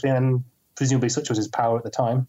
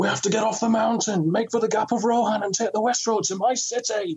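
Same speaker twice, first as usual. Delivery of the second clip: very high, loud shouting; 9 semitones higher than usual. Retelling a snowstorm scene on a mountain: Sean Bean shouting impression. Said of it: "That was a very good impression".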